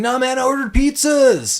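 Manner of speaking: very high put-on cartoonish character voice. Retelling a movie character's reply to his bored friends: Donatello voice. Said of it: "That's my best Donatello voice".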